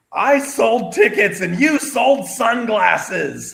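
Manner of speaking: put-on very high, sloppy, drunken screaming. Retell how a drunk Ric Flair just kept screaming at another man, imitating drunk Ric Flair screaming. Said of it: "just kept screaming".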